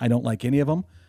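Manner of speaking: whisper. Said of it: "he was kinda doing it in a whispery".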